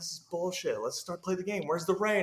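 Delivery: high-pitched yell. Retelling yelling at NCAA officials: imitating own yelling. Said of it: "I'm, like, yelling".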